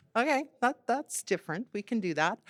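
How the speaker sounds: ordinary talk, nothing marked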